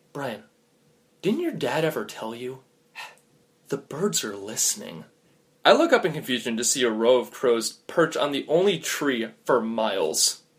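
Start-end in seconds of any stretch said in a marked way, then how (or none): 0.1-5.0 hushed half-whisper, very close to the ear. Telling a story where the other speaker half-whispers a warning: half-whispering a warning. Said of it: "put your hand over my mouth and whisper".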